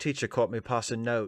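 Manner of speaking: ridiculous, silly put-on British accent. Joking that the british would say passing note: ridiculous british accent. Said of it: "with the ridiculous accent and all".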